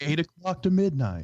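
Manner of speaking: easy-listening radio DJ voice. Playing along after being told he sounds like a radio host: put-on easy listening radio host voice. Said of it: "that easy listening host on the lower F M stations".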